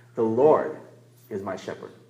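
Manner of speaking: the word LORD stressed.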